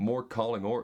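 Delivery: American-accented delivery. Showing how the phrase sounds in different accents, now the american one: american accent. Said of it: "Here's American".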